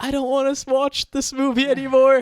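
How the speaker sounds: mock very high, loud, sobbing tearful whine. Retelling a girl behind them at a movie, imitating her crying. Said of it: "behind us starts crying".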